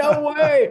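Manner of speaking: piercing, very high, very loud ecstatic scream. Retelling hanging up the phone after hearing the sponsorship news: imitating own past scream.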